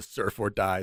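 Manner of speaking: ordinary talk, nothing marked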